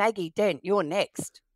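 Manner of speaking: big, strict, stern commanding voice. Retelling how she called the speaker in while playing doctor's nanny, imitating a big stern voice. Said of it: "in a big stern voice called out".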